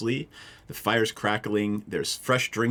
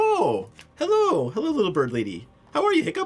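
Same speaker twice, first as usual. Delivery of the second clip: very high, swooping housekeeper character voice; 13 semitones higher, 3 dB louder than usual. Voicing the halfling housekeeper greeting the party at the door: halfling housekeeper voice. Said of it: "the halfling housekeeper answers and says".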